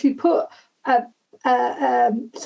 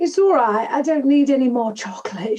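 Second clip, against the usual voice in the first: Yorkshire way of speaking. Retelling a child handing back chocolate, in a Yorkshire accent. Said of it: "in this Yorkshire accent".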